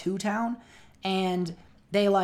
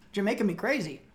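talking while eating, mouth full. Joking with the others while eating a cookie: eating while talking. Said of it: "Sorry, I'm eating a cookie".

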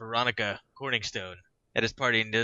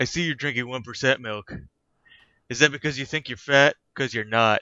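mock-deadpan, flat, put-on delivery; 4 dB louder than usual. Speaker quotes a movie character approaching a girl in the lunchroom, imitating deadpan delivery. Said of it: "It's just a stupid deadpan deliveries".

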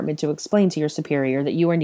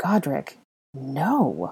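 breathy, barely voiced, on a breath. Hermione, standing in shock as Malfoy barks at her: breathed. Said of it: "Hermione breathed".

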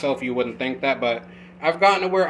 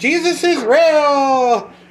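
put-on very high, loud, chick-like girlish voice; 12 semitones higher, 8 dB louder than usual. Trying to imitate Joey though you can't do his voice: failed Joey imitation, sounding like a chick. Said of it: "You sound like a chick".

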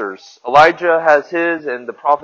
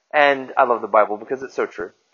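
ordinary talk, nothing marked

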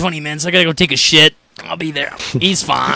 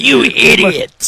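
high, pissed-off, put-on angry scolding; 5 semitones higher than usual. Imagining the listener's grandparents scolding them for falling, mock-scolding, pretend pissed off. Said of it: "I could totally see your grandparents be pissed at you".

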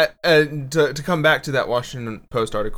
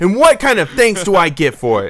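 exaggerated, loud, fake New York accent; 5 semitones higher, 7 dB louder than usual. Doing his bad new york accent in a comedy bit. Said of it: "I'm doing his bad New York accent, too".

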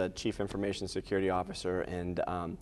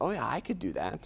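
light, offhand, pitched-up joking quip, put-on; 6 semitones higher than usual. Recounting being urged to write a book, retelling a joking remark. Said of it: "And I jokingly said".

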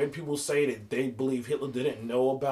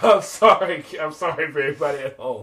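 very loud words spoken through laughter; 2 semitones higher, 9 dB louder than usual. Apologizing to listeners after an outburst, laughing while talking. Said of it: "I just couldn't hold myself in".

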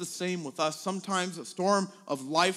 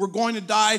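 loud, frightened shout; 3 semitones higher, 7 dB louder than usual. Retelling the storm story, the speaker voices the disciples shouting at Jesus in fear. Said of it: "They're shouting at Jesus".

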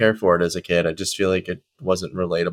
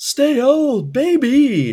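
put-on high-pitched voice with the word baby drawn out; 4 dB louder than usual. Redoing a line as Jerry Seinfeld would say it: Jerry Seinfeld impression. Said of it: "but he'd be like".

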